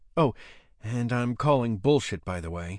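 ordinary delivery, nothing marked

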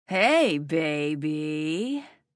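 slow, lazy drawling delivery. A man at the door greets the narrator, beer in hand, drawling. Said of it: "he drawled".

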